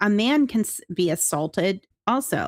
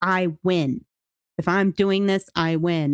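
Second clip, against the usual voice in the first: mock angry, slow, stubborn insistence; 2 semitones lower than usual. Retelling a husband insisting he must win: imitating an angry man. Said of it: "he was just getting so mad".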